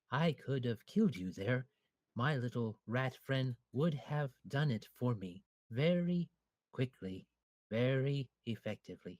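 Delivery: quiet whisper. A game master voices a character leaning down to the one he carries: whispering. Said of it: "he leans down and he whispers".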